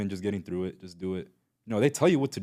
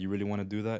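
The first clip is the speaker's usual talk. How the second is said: the calmest, soft, deadpan voice; 5 dB quieter than usual. Speaker recalls facing down inmates who challenged them, imitating own very calm voice. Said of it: "in the most calmest voice ever".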